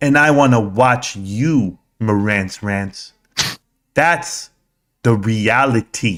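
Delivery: very slow, unhurried, plodding, dragged-out delivery. Showing how a man talks by acting out his words: imitating very slow speech. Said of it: "That's how slow he speaks".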